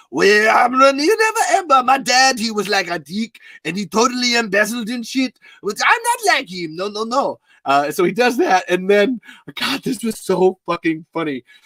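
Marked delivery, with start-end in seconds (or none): 0.1-7.4 put-on swooping, sing-song French accent. Retelling a game session, the speaker does this character in a french accent. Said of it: "does a French guy".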